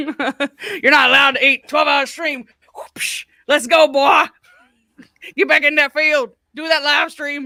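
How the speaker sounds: put-on harsh, commanding Southern American accent. Imagining a line said differently, a streamer speaks in a mock Klansman accent. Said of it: "with that Klansman accent".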